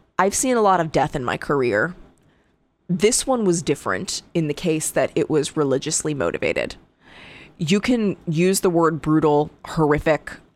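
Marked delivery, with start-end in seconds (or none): none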